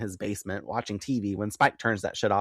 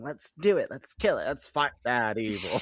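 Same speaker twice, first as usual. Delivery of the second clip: put-on eager enthusiasm; 3 semitones higher than usual. Recapping an episode, the speaker acts out Spike: mock-eager Spike voice. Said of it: "Spike enthusiastically embraces heroism".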